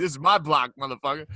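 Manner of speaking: loud taunting trash talk. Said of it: "talking shit in the streets".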